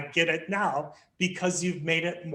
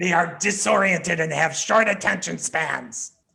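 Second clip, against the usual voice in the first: menacing, spooky voice; 4 dB louder than usual. Reading the contrasting 'they' statements aloud, in a scary voice. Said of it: "read the they statements in a scary type of voice".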